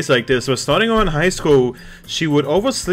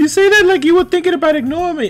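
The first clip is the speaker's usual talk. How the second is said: put-on girl character voice; 4 dB louder than usual. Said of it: "I should give her a girl, a girl voice".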